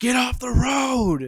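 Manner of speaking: fed-up yell, very high and very loud. Retelling how someone in their car rolled down the window: imitating a frustrated yell. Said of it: "yells in just the most frustrated voice".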